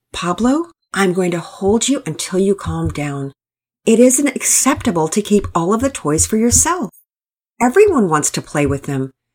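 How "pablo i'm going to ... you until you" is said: ordinary delivery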